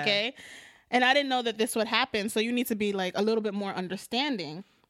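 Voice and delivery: ordinary talk, nothing marked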